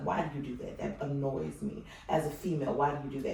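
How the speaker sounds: low, hushed half-whisper under the breath. Retelling what she used to ask someone who burped, half-whispering. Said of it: "I'm whispering".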